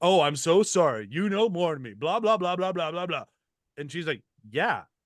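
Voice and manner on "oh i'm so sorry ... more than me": mock-sarcastic, put-on apologetic tone. Retelling a TV scene where Michael answers Chidi, retelling Michael's sarcastic line. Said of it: "hits him with this very sarcastic".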